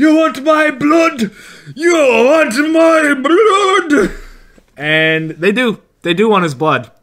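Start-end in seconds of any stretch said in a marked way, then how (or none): 0.0-4.1 high-pitched, slow, drawn-out, repeated yelling. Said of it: "yell repeat".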